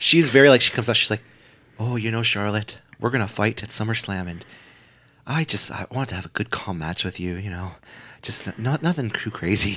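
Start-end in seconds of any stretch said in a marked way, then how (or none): 1.8-9.8 gentle, very hushed, very quiet soft-spoken voice. Retelling what Trish Stratus said on coming out: imitating soft-spoken Trish Stratus. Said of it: "It's very, like, soft-spoken".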